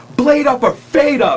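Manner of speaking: mock menacing, yelled, screaming voice. Retelling a man who got pissed at being called a name: retelling a scream. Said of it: "he's screaming".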